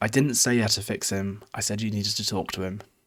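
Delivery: plain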